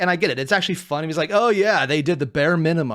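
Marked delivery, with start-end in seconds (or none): 1.3-3.0 mocking, dry, sarcastic jab. Act out what a man said as a joke you found funny, imitating someone being sarcastic. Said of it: "he's being sarcastic".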